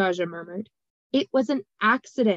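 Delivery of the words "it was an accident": firm, insistent, pressing tone. Sandry answers Daja's remark, insisting. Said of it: "Sandry insisted".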